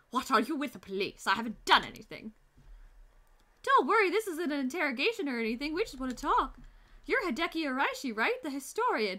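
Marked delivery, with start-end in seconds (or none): 0.1-2.3 put-on generic, stock British accent. Voicing a game character questioned about the police: generic British accent. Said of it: "generic British one".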